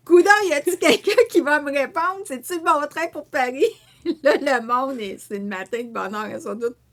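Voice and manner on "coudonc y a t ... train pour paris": put-on big, stern, loud, pitched-up voice. Nobody on the train answers her, so she puts on her big voice. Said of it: "je sors ma grosse voix".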